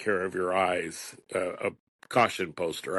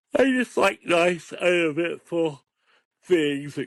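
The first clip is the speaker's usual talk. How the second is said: very high, loud words spoken through a yawn; 10 semitones higher, 5 dB louder than usual. Mid-conversation, the speaker talks through a yawn. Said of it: "Excuse me, I'm yawning".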